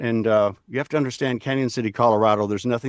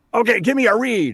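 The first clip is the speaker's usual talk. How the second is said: full of life, smiling, high-pitched, energetic voice; 11 semitones higher, 3 dB louder than usual. Recalling a casting director at a peanut butter audition: imitating a lively, smiling delivery. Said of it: "said it with so much life and so much smile and so much energy".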